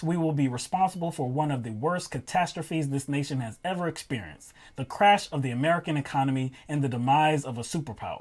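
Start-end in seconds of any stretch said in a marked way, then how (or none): none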